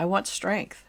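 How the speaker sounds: imitated very weak, feeble voice. Retelling what a woman answered when asked what she wanted: imitating a very weak voice. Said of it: "And in a very weak voice".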